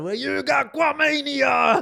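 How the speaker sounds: very high, booming, drawn-out put-on wrestler voice. Joking that a word sounds like a wrestler: put-on wrestler voice. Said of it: "this sounds like a wrestler".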